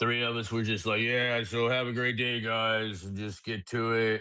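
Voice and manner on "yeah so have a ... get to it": slow, unhurried, drawn-out delivery. Retelling pretending to be Carney after the morning stand-up: impression of Carney. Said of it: "we all pretended to be Carney".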